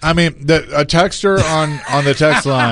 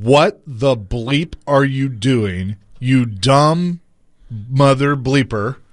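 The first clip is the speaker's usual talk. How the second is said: slow, careful, deliberate word-by-word, "dumb" drawn out. Retelling what you said at the TV, slowly and carefully so you don't slip up. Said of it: "I'm going to say this slowly".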